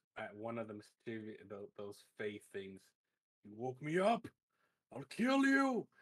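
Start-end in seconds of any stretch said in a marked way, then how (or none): 3.5-5.8 high, swooping, enraged, all-out furious yelling. Voicing a character charging at the Fae: furious angry shout. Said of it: "fucking, fucking angry".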